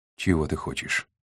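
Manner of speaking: ordinary delivery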